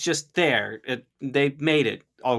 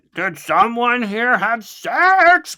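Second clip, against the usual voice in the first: stern angry dad voice, raised, slow, "sex" drawn out; 9 semitones higher, 6 dB louder than usual. Retelling how a character with a staff scolds the group; mock-angry dad voice. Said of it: "he's given full on like uh Mad Dad vibes".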